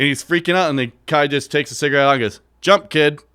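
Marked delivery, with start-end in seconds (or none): 2.6-3.1 put-on calm, nonchalant voice, higher and louder. Retelling a circus story, quoting the elephant handler: imitating a nonchalant handler. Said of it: "It's just so nonchalant".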